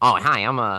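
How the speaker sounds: jumpy know-it-all voice.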